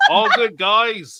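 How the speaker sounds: put-on Australian accent, loud, slow. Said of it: "a few words were a little bit British".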